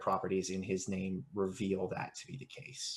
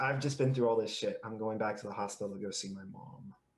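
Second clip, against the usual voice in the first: mournful, downcast, sad voice, hurried; 2 semitones higher than usual. Imitating another player's line about going back to the hospital: imitating a sad line. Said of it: "It sounded so sad".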